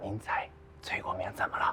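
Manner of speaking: barely audible speech. On the phone to the factory director, who cannot hear, speaking too quietly. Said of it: "声音大点".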